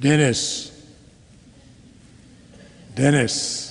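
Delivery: harmonious, sweet, rich deep bass calling out. Imagining the Lord calling the speaker's name: God's sweet deep bass voice. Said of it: "sweet, harmonious, and a deep bass voice".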